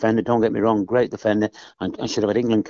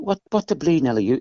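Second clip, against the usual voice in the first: put-on Irish accent, pitched up; 6 semitones higher than usual. Retelling what Eamon Dacey once said to him, in Eamon Dacey's Irish voice. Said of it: "in his Irish voice".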